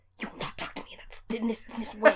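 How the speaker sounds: hushed, very quiet, whispered scolding tone. Retelling moms quietly fighting with daughters at a store: imitating a very quiet scolding. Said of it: "getting into very quiet".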